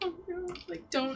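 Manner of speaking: high, slow, meek, cowed little voice. Playing a character going along with a lie, cowering: cowering in character. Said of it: "cower and be like".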